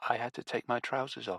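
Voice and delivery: even smaller, tiny, soft, shrunken voice. An unseen person answering from among the trees: even smaller voice. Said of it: "And then in an even smaller voice".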